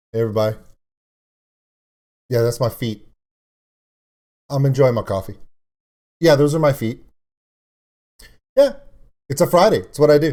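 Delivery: lazy, bored, relaxed, effortless nonchalance. Doing an impression of a drummer looking bored while playing: imitating the drummer, bored and relaxed. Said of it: "my impression of him playing the drums".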